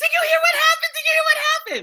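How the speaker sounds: acted-out, excited, very high, rushed blurt. Retelling a phone call from an assistant with news: imitating Hillary, excited. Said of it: "she gets really excited".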